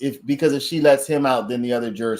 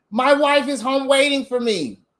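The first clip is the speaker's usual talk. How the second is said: very high, meek, caving pushover voice. Acting out a skit about a juror called a pushover: acting out a pushover juror. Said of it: "that's him".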